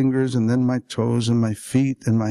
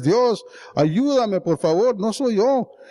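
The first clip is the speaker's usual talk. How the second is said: put-on crying, high, tearful, wild shouting; 10 semitones higher than usual. Recalling praying on his knees in the desert dust, retelling a crying, shouted prayer. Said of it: "through the tears and the groans, I shout prayers".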